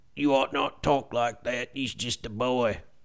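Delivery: soft, subdued delivery. Showing the impression they do best, a Karl from Sling Blade impression. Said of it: "I do the best is Carl from Sling Blade".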